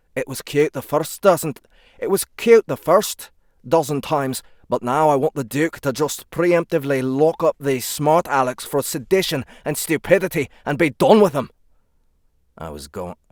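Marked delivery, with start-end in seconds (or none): 0.2-11.5 put-on Scottish accent, higher and louder. Reading a character's lines aloud: scottish accent. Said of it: "polish my Scottish accent".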